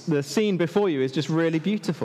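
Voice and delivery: ordinary talk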